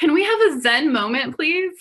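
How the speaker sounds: calm but loud. Recalling trying to quiet a group of girls to record them: retelling a calm yet loud call. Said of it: "both a calming and a loud voice".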